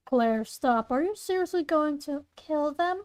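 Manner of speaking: ordinary talk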